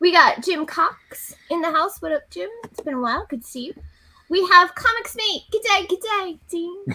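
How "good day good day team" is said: bad, terrible put-on Australian accent. Welcoming a guest with a habitual joke: terrible Australian accent. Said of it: "That's my terrible uh, Australian accent".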